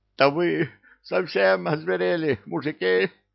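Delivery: put-on very high, hoarse, creaky, rough wheeze. Reading a story aloud, voicing the imp just brought back: wheezing in a sober voice. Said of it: "просипел Бессони абсолютно трезвым голосом".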